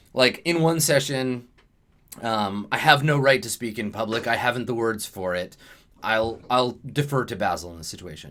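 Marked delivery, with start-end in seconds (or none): none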